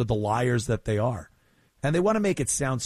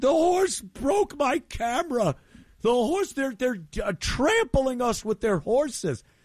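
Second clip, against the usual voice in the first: mock male screaming, much higher, faster; 12 semitones higher than usual. Telling how a horse nudged a man filming, imitating him screaming. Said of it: "he starts screaming".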